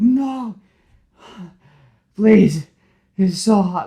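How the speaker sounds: tearful pleading voice. Retelling a game scene where a villain begs in the heat: imitating crying. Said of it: "he's, like, crying".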